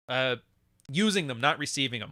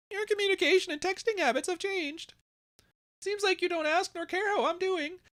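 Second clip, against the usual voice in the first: very high, silly, mocking put-on voice; 3 dB quieter than usual. Reading aloud a sad message someone sent, in a stupid mocking voice. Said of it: "I'm doing the stupid voice because it's that lame".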